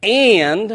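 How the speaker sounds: stress on AND, set apart by long pauses.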